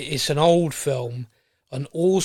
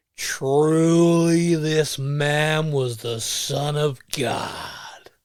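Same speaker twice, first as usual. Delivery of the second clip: very slow put-on drawl, every word stretched. As a Roman centurion looking up at a man being crucified, John Wayne voice. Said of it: "in his John Wayne voice".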